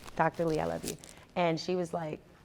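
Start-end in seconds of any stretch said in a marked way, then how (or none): none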